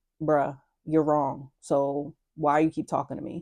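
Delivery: calm dismissive tone, no yelling. Showing how the listener might sound in an argument: calm dismissive tone, no yelling. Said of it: "you have this tone to you like".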